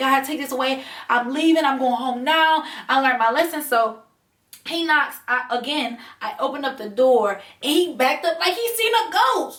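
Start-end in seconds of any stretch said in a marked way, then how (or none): 0.0-3.6 put-on, acted crying out. Retelling her face covered in hives behind a door, acting out crying out to God. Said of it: "So I'm crying out to God".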